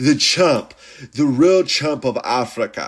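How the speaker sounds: bad, booming, big, loud, drawn-out voice. Trying a quick impression of a fighter after saying you'll try: bad DDP impression. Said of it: "That's all I can fucking do with D D P".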